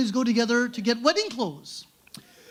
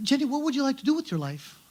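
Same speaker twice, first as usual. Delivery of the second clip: ordinary talk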